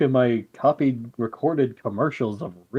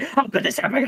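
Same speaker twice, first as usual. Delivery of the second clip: put-on angry yell, higher; 12 semitones higher than usual. Imagining a character yelling at another like a responsible stepmom. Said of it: "yelling at him like a, like a responsible stepmom".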